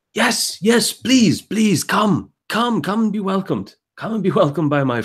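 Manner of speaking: put-on very high young voice with slight German accent. Game master voicing a young man welcoming the party, somewhat german accent. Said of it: "this voice that sounds inexplicably like a somewhat German accent".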